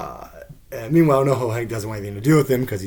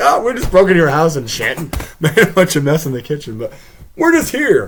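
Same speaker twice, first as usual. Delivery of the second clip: breezy, nonchalant, pitched up and raised; 5 semitones higher, 8 dB louder than usual. Retelling a scene after a break-in: imitating nonchalant Gene Cousineau. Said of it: "completely nonchalant".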